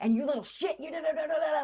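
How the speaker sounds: very high, mean, berating yell. Retelling how an acting teacher started yelling: imitating teacher yelling. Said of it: "she starts yelling at me".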